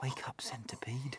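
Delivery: gentle, very hushed, very quiet whisper. James wakes the sleeping centipede with a gentle dig: whispering. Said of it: "whispered James".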